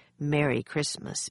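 ordinary talk

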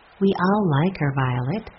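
ordinary delivery

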